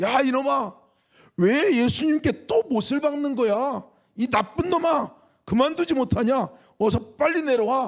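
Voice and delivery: very high, loud, furious shout. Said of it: "소리쳐서 외쳤습니다".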